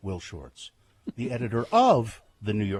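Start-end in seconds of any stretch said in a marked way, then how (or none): 1.2-2.8 heavy stress on of in editor of. Mimicking how she introduces the New York Times puzzle editor: heavy stress on of. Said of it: "Why are you emphasizing the word of?".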